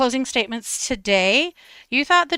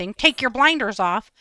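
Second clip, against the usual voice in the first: patronizing, condescending, talking-down lecturing tone. Retelling what the defense said to the jury: imitating a condescending tone. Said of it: "She says it in a condescending way".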